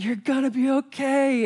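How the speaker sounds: slow, high, drawn-out shout. Recounting calling down to a woman who screamed about her legs, retelling a shout. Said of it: "And I shout".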